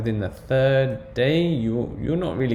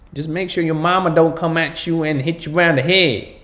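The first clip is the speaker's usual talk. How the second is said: terrible put-on American accent, loud and high; 6 semitones higher, 6 dB louder than usual. Talking to an audience before moving to the next item; terrible American accent. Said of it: "that's my terrible American accent".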